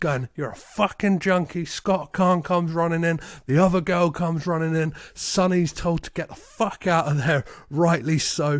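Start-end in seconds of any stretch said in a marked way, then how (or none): none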